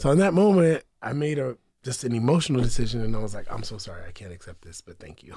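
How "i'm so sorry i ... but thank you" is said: mock very quiet, gentle, soft and polite tone. Retelling how they turned down an offer: imitating own very nice refusal. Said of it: "I said it like that too. I was very nice about it".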